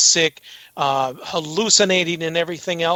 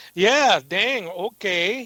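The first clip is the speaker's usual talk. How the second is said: put-on Minnesota accent; 3 semitones higher than usual. Speakers in Minnesota joking about local speech, doing a Minnesota accent. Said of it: "Minnesota accent that we, since we're in Minnesota".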